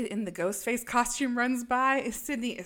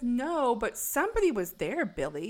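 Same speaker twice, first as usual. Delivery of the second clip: normal talking voice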